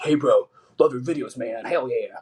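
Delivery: put-on big old country man voice. Retelling a man at a bar approaching discreetly, big old country man voice. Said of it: "he's like this big old country man".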